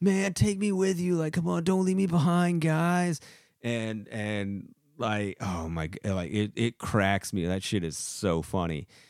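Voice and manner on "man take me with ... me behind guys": very high, put-on child voice. Retelling how a gamer pretended to be a kid: imitating someone faking a kid voice. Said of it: "he's really good at pretending that he's a kid".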